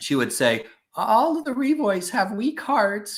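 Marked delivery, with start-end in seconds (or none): 0.9-3.2 put-on very high-pitched, grandmotherly, pronouncing old-lady voice. Speaker quotes their great-grandmother's family saying; imitating great-grandmother's voice. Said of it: "She had a voice like that".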